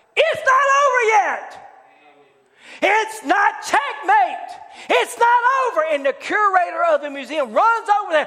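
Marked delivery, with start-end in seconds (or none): 0.1-5.8 mock, high, drawn-out screamed cry. Retelling how a chess champion in a quiet museum screamed out: imitating a scream. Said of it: "he screams out".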